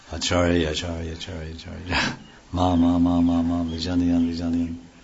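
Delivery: put-on old man's very deep, cavernous, echoing intoning. Retelling what the guru said every day, in a very deep voice. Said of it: "very deep voice".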